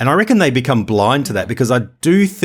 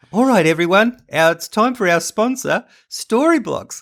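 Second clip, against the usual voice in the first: put-on high child-like voice; 8 semitones higher than usual. Imitating the co-host introducing the sponsor: high-pitched impression of Brady. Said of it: "make your voice go up eight octaves when you impersonate me".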